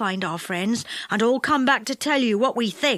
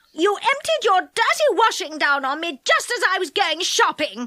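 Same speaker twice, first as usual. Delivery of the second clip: furious, angry, high-pitched yell; 7 semitones higher than usual. Reading a story aloud, voicing a character in a fierce quarrel: angry yell. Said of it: "yelled an angry voice".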